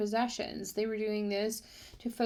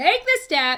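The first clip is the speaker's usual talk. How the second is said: heated, forceful, angry, high-pitched insistence; 6 semitones higher, 6 dB louder than usual. Speaker catching themselves getting angry, angry and forceful. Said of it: "why am I getting angry about that?".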